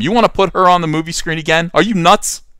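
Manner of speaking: loud full yell. Objecting to casting her on the movie screen again: yelling. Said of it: "I hate to yell, but I have to yell".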